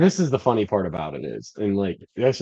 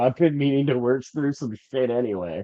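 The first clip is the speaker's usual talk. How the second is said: ordinary talk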